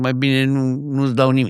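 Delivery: ordinary delivery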